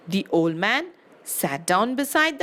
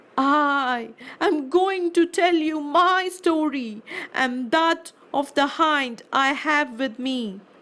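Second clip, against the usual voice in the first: humble, high pleading, drawn-out "I"; 5 semitones higher than usual. A man throws himself at the genie's feet and asks it to listen; pleading. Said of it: "there came an old man leading a hind. / there came an old man leading a hind. They greeted one another, and the old man said, "May I ask you, brother, what brought you to this desert place? / there ca".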